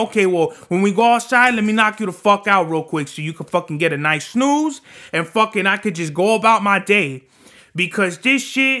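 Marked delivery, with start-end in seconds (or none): none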